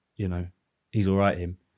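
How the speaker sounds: ordinary delivery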